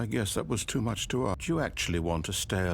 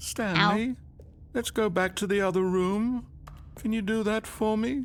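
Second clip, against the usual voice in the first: very high-pitched, upset voice; 11 semitones higher than usual. Asking the player to go back to the other room, in an upset voice. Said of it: "You sound upset".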